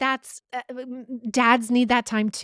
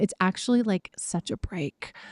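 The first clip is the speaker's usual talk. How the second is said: hushed whisper, lower and quieter; 4 semitones lower, 3 dB quieter than usual. Speaker whispers because her husband is in the other room, whispering. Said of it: "I'm whispering because my husband's in the other room".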